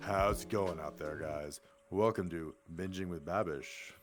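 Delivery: put-on deep calm voice. Welcoming the audience to the show, calm, deep fake voice. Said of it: "That's just the fake voice".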